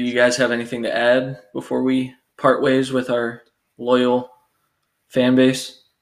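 halting, word-by-word delivery with sarcastic pauses. Asking the others if they have anything to add: sounding sarcastic, pausing after every word. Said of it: "That sounded so sarcastic".

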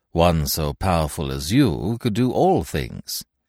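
ordinary delivery, nothing marked

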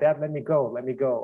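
mock desperate begging and pleading tone. Retelling a film scene where a daughter pleads with her dad, acting out begging and pleading. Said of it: "kind of begs and pleads to her dad".

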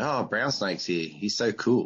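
ordinary talk

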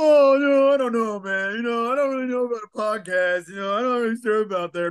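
mocking hesitant voice. Retelling how the other speaker kept dodging the podcast idea: mocking imitation of a hesitant friend. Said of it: "every time you were like".

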